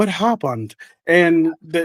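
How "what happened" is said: put-on English accent. Retelling a story, quoting a woman's husband arriving at the hospital: English accent impression. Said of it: "that's my impression of his English accent".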